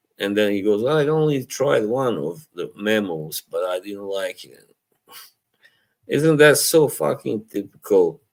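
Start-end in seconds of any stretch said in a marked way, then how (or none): 0.9-4.7 put-on smug, self-satisfied, superior dismissive tone. Retelling a reply on someone's last stream: smug imitation of Eugene. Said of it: "went really smugly".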